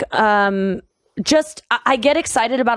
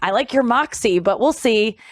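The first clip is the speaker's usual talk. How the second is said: normal talking voice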